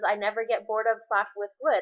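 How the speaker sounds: ordinary talk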